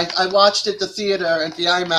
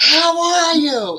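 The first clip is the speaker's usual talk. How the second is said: put-on booming, very loud, high-pitched hello; 11 semitones higher than usual. Speaker retells their dad greeting them at the docks, in a loud voice. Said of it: "in a real loud voice".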